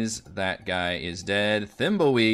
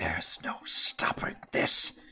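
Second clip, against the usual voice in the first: snarling whisper; 4 semitones lower than usual. Narrating a fight, voicing her addressing all the players, snarling whisper. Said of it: "she does snarl at all of you a little bit and kind of whisper like".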